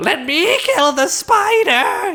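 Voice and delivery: very high, drawn-out, stretched excited voice. Discussing Carnage's moves, the speaker quotes his line as a mock-excited Carnage impression. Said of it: "He's like all excited".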